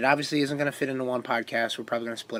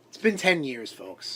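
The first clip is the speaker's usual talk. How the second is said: jokey, ribbing, mocking, teasing tone. Teasing the other speaker about a ten-year anniversary: mocking tone. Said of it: "I'm mocking you".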